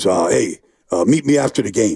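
deep put-on voice. Retelling a football pile-up story, imitating Reggie's deep voice. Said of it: "Reggie in that deep voice".

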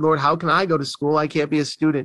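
ordinary talk

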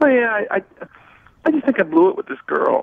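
on the verge of crying. Answering questions on a call about a girl, about to cry. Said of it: "You sound like you're about to cry right now".

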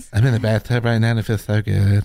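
put-on woman's voice. Improvising a scene with friends, playing the woman in the bath: put-on woman voice. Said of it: "I'm doing the woman voice".

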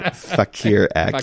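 slow, careful put-on voice, drawn out word by word. A radio speaker pronouncing a tricky word for listeners, said slowly. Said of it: "if I say it slowly".

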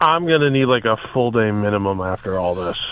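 glum, downcast, gloomy delivery. Asked if the plan is cool with him, he answers: gloomy, depressed voice. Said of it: "you sound like the freaking that freaking thing on Sesame Street that was always depressed".

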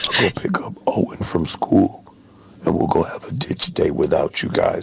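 very low, creepy, horror-movie villain voice. Sending a voice message to the group: sounds like a horror-movie villain. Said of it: "He sounds like a horror movie, like, villain".

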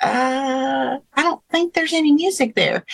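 put-on small childlike voice, thoughtful, drawn-out uh. Retelling how Drew answered the friends' question about a scene: little Drew voice. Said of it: "in his little Drew voice".

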